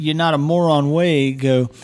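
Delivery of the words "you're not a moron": ordinary delivery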